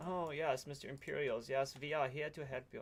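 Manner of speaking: fawning, laid-on put-on German accent. Practicing the inspector's lines to the Imperials in character: German accent. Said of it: "sorry, that was German".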